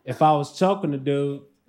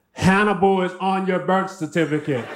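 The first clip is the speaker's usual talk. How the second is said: ordinary talk, nothing marked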